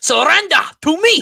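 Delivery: shrill, very high yell in bad French accent. Praising a movie performance, demonstrate the line, yelling like Robert Pattinson's bad French accent. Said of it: "his French accent, ... How he yells that".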